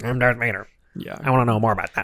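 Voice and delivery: nasal put-on villain voice. Retelling a comic scene about the Emperor's agent: nasal Darth Vader voice. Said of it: "Great Vader voice, famously nasally Darth Vader".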